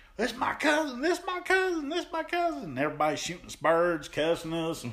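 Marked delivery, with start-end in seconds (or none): 0.2-2.8 mock, very high shrieking, repeated over and over. Retelling what a man shouted after the ring match, imitating someone screaming. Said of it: "he starts screaming".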